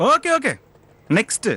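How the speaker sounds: mocking brush-off, pitched high. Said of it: "ரொம்ப நக்கலா பேசுற மாதிரி தெரியுது".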